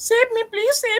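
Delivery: very high put-on girlish voice with pleading tone. Asked to speak quickly in a voice like a girl, doing a girl's voice pleading for help. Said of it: "a voice quickly like a girl asking for save me".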